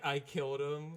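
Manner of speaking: mock crying with sniffles. Retelling how Callie held him, thinking he would die: Callie sniffling through tears. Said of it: "through the sniffle".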